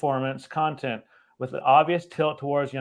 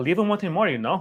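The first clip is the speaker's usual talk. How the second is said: high voice with a heavy put-on Spanish accent; 4 semitones higher than usual.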